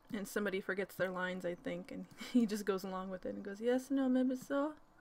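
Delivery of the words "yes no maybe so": put-on slow, stretched-out Polish accent. Retelling a blooper, imitating Paul Wesley's Polish accent. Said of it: "In a Polish accent".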